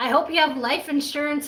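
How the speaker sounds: ordinary delivery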